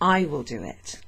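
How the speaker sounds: word "I" hit hard, heavily stressed. Showing how English speakers emphasise the subject, stress on I. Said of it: "we would put emphasis on the subject by just like saying it like this".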